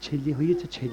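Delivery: soft, close whisper. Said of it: "তা নয় আস্তে আস্তে কানে কানে".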